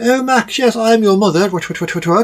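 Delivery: very high, fake, put-on English accent. Complaining about an actress playing a mother, imitating her false english accent. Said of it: "she's now got this English accent as well".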